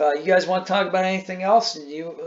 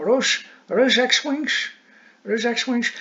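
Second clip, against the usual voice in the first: put-on speech through fake fangs, higher; 6 semitones higher than usual. Imitating a character who sees X-Wings arrive: imitating talking with vampire teeth in. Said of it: "he's like his vampire teeth".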